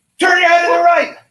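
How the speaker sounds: shrill, high, loud shouting. Showing how the yelled order sounded: imitating a partner yelling. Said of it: "this is what it was".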